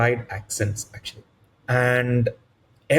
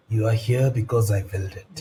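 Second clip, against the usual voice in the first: low, ominous, menacing villain voice; 5 semitones lower than usual. Recalling running Curse of Strahd, quoting the villain: imitating ominous Strahd. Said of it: "I just used my own voice with the whole ominous".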